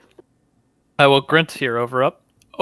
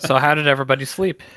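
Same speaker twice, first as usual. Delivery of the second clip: plain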